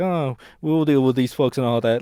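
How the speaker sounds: put-on sarcastic voice. Describing a sarcastic movie character, then imitating her: sarcastic Brenda voice. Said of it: "she's very, like, sarcastic".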